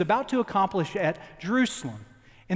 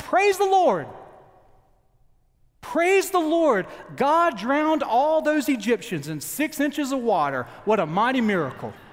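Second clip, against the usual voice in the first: put-on high shout, called out; 5 semitones higher, 3 dB louder than usual. Retelling a joke about a churchgoer: imitating a man shouting. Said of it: "The same man in the congregation shouted out".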